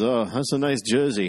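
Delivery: put-on Finnish accent. Retelling a former player complimenting his jersey from behind: Ruslan Fedotenko's Finnish accent. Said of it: "in his Finnish accent".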